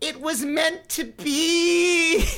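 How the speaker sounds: acted ecstatic, very high pitch, very slow, drawn out. Retelling a girl arriving with cupid results: imitating her euphoric voice.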